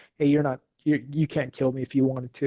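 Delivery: ordinary delivery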